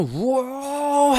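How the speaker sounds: slow, stretched high exclamation. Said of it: "하고 외치면서".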